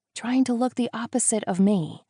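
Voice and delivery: hushed voice. Reading a scene aloud, answering a companion at a restaurant: whispering. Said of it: "I whisper".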